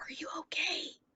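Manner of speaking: very soft stage whisper. Playing Charlie, turning to another character while following someone, Charlie's stage whisper. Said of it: "Like stage whisper".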